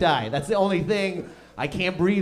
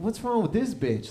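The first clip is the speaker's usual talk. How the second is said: mock annoyed, hostile, angry tone; 5 dB quieter than usual. Retelling own reaction to an old lady greeting: imitating own angry reaction. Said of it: "that's how angry I am being".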